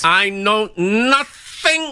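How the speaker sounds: squeaky, very high-pitched voice. Doing a line that the other speaker then names: Sergeant Schultz voice. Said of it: "Sergeant Schultz".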